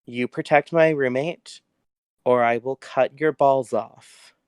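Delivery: slow, menacing, threatening tone, up close. Voicing a character who leans threateningly close to a player: threatening. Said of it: "really threateningly close".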